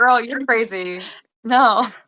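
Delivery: slow, loud, incredulous and sassy. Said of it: "you'd be like".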